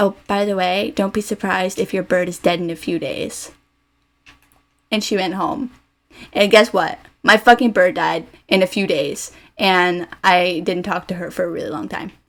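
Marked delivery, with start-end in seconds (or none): 0.0-3.5 hushed, confiding stage whisper under the breath. Retelling what a friend said while leaving: imitating someone half-whispering. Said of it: "she leans over and whispers to me".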